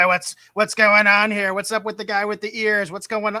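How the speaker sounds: loud, scratchy smoker's voice. Retelling how someone showed up on set: imitating Lucille Ball's scratchy voice. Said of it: "with that scratchy voice and be like".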